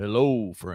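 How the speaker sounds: weirdly deep put-on radio announcer voice. Imitating a young podcaster's weirdly deep voice. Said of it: "weirdly deep voice for a".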